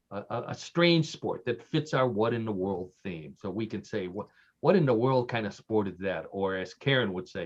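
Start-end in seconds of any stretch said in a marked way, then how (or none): none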